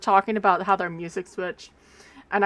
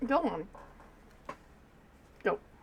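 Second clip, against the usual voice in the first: motherly voice, much quieter; 11 dB quieter than usual. Speaker shoos a cat away from her hand, in a mom voice. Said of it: "I will mom voice you".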